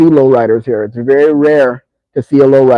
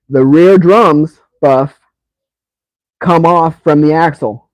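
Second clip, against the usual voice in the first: loud yell carried across a room; 3 semitones higher than usual. Explaining the car's rear drums to another speaker: yelling. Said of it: "You don't have to yell".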